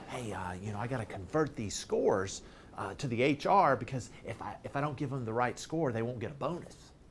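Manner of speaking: very low, soft, hushed half-whisper. Retelling what a man said to the speaker: half-whispering. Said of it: "he said this in a whisper".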